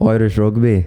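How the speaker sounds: attempted put-on Irish accent. Trying out an accent for the others, irish accent. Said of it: "How good is the accent though?".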